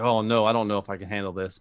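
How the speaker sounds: ordinary delivery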